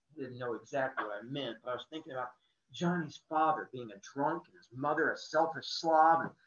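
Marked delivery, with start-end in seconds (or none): none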